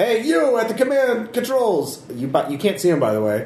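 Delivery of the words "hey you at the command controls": very high-pitched yell from a distance. Voicing a guard who spots someone at the controls: yelling from a hallway. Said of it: "yelling from the hallway".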